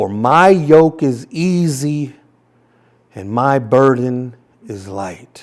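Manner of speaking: slow, deliberate, unhurried, easy drawn-out reading. Reading a passage aloud to listeners with their eyes closed, reading a little slower. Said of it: "read this to you just a little bit slower".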